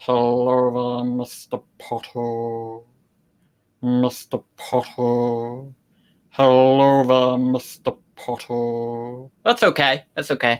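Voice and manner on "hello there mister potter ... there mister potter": low, very slow drawl with crisp t's. Warming up a requested impression, repeating the line, slow Snape impression with crisp T's. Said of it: "You do Snape slowly and pronounce T's a lot".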